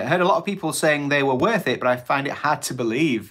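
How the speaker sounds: ordinary talk, nothing marked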